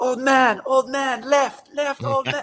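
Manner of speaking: acted very high, slow, drawn-out holler. Retelling a race start where the other boats yelled: imitating boats yelling. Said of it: "all the other boats are yelling".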